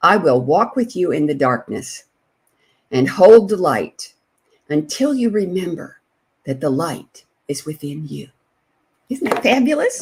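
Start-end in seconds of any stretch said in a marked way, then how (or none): 0.0-8.3 unhurried, slow delivery. Reading out a life coach's mission statement so listeners can write it down; speaking slowly. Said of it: "so I'll speak slowly".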